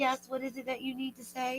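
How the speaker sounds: mock gentle, very soft, quiet, calm voice. Imitating a calm mother answering her kids: imitating someone talking calmly. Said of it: "talking so calm".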